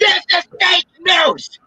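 very high, shrill, comic joke yell. Declaring a rumor false to the others: yelling for comedy. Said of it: "I yelled that way just to be funny".

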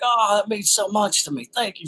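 very high-pitched, put-on British accent. Retelling an actor on set putting an arm around the speaker, Daniel Day-Lewis British accent. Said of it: "British accent".

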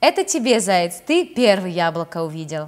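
ordinary delivery

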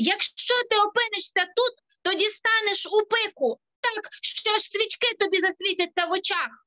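calling out across a distance. Ronia calls to Birk, who is getting ready to jump the chasm, shouting. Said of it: "Роня крикнула".

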